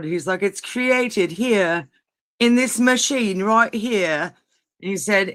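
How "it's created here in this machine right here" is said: faked, put-on British accent. Recounting a video where a man explains a cloud machine, imitating a British accent. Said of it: "he's like doing this like British accent".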